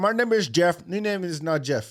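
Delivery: terrible put-on Indian accent. Bantering with a co-host, doing a terrible Indian accent. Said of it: "That was a terrible Indian accent".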